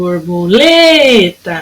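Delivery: lê in borboleta held longest. Calling a butterfly to find the stressed syllable: syllable lê held longest. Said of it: "o lê foi o que durou mais".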